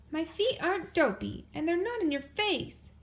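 high-pitched shouted delivery. Sister answers Brother's complaint in their morning argument, shouting back. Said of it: "she shouted back".

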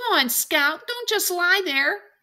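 very high, loud, urgent scream. Urging a frozen child lying on the ground to get up, screaming. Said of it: "Jim was screaming".

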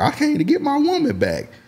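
very high put-on impression with wide-swinging pitch.

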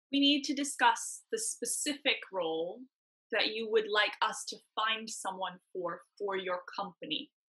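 very slow, deliberate, drawn out word by word. A speaker on a call addresses a company's team: very slow speech. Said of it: "Why is she talking so slow?".

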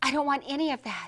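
ordinary delivery

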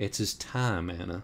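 plain reading voice

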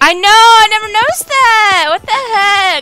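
very high-pitched, loud freaking out. Streaming a game and noticing something new, freaking out. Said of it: "I'm freaking out now".

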